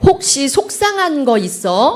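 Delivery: said slow and loud.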